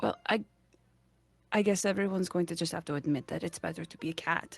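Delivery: hushed, very quiet, low-pitched whisper. As Tal, leaning over to Shazire during the high five, in a low whisper. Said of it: "in a very low voice whispers to him".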